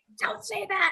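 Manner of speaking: mock screaming, very high, scolding tone. Retelling a father screaming at a mother: imitating someone screaming. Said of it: "screaming at my mom".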